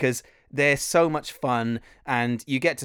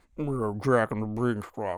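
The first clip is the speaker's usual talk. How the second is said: put-on creepy villain voice, quieter; 2 semitones lower, 4 dB quieter than usual. Retelling how an auditioner read the panto script: Buffalo Bill voice. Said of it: "he read it as Buffalo Bill from Silence of the Lambs".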